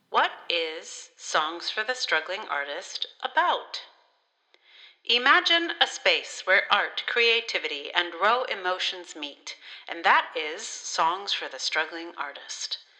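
fake, slightly robotic filtered robot voice. Reading aloud text the robot wrote: put-on robot-like filter voice. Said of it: "put it in a filter that makes it sound a little bit like a robot".

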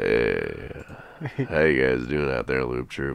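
put-on seductive, very low, slow sexy voice. Greeting the listeners after being told they sound sexy: put-on sexy voice. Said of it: "sexy voice guy on the phone".

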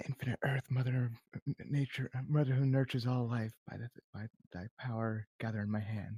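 whispering under breath. A character casts a spell to steal pudding, whispering under her breath. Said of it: "was whispering under her breath".

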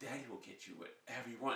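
imitated soft baby talk. Retelling talking to a newborn daughter: imitating own soft talk to baby. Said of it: "Duncan Hines cookie soft I was".

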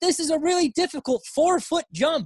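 very high, dripping sarcasm, overstated. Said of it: "a little bit of sarcasm".

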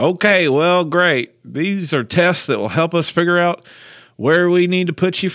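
put-on heavy, thick Georgia Southern accent, loud. Retelling a man's reply to the speaker as a kindergartner; thick georgia southern accent. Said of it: "like this really thick kind of Georgia Southern accent".

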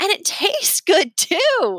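very high, swooping, giggly laughter through the words. Narrator reads Remy's line after a big burp with Leo, laughing. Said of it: "Remy laughed".

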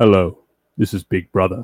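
put-on deep, booming announcer voice. Taking a turn at voicing the show's announcer, in a deeper Big Brother voice. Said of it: "Does that sound deeper?".

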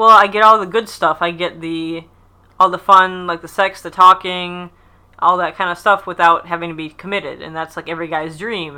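plain

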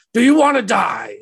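put-on high, all-out shrieking scream. Voicing a play's lead performer on stage: screaming. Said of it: "lead performer just screaming".

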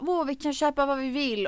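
mock delighted, high, overjoyed gushing. Telling how mom reacted, retelling mom's overjoyed gush. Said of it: "och mamma är jätteglad".

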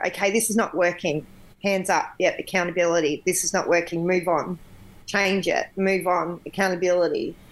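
plain

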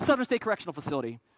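rattled-off, fast, swallowed, mumbled words. Retelling how he answered a man asking about his seminary: quick mumble. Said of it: "I would use the gift of mumbling, and I would say very quickly".

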